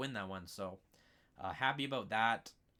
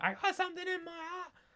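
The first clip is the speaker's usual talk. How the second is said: very high-pitched, anguished, pained scream. Retelling how a fighter on the ground complained: imitating Anthony Taylor screaming. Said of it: "screaming, like".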